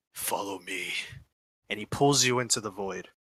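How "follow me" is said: deep, very quiet, hushed, low murmur. Voicing Eskanoskevich pulling a player close: deep voice. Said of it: "He's in a deep voice".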